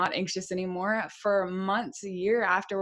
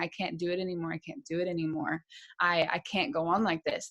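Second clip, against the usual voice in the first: imitated crying, tearful pleading voice; 2 semitones lower than usual. Retelling breaking down on a curb as family came out: retelling own crying words. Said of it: "I just started crying and saying".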